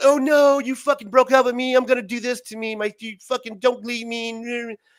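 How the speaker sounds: high, loud, distraught, upset railing. Retelling how a girl reacted to being dumped, imitating a distraught ex-girlfriend. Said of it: "And they would be".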